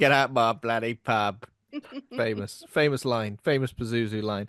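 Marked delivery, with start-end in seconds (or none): 0.0-1.4 put-on East End London accent. Joking on a podcast, voicing Pazuzu in an East End accent. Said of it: "Pazuzu was definitely an EastEnders".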